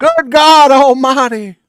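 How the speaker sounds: very high, very loud, booming ringside announcer yell. As the group debates who does him best, exclaim in a JR impression. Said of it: "Who here has the best JR impression".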